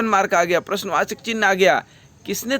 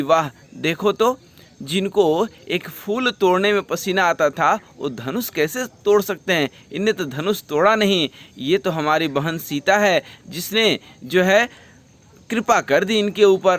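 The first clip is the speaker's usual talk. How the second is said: normal talking voice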